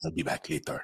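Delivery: mock casual threatening tone. Imitating a show villain who threatens calmly: imitating a nonchalant threat. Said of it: "they threaten you nonchalantly".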